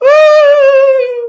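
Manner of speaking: put-on very high, loud dog wail, crying like a baby.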